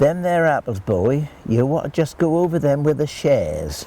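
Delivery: put-on Norfolk accent. Quoting what an old gentleman told the speaker, in a Norfolk accent. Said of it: "He said in a Norfolk accent, which I'll, I'll try and do".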